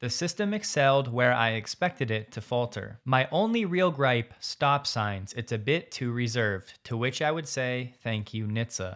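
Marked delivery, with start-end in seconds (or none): 8.0-9.0 mocking sarcastic tone, lower and quieter. Complaining that the car is too reserved at stop signs: sarcastic. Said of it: "Sarcastically, of course".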